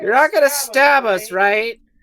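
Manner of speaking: very high, very loud, distant gnome-like cry. Voicing gnomes who hesitate and call out to the party: voicing a gnome calling from afar. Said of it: "from far away you just hear".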